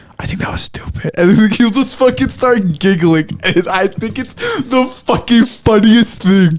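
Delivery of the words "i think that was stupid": soft, breathy whisper spoken very close. Retelling whispering comments to a friend during movies: imitating own whisper. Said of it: "I'm whispering into his ear".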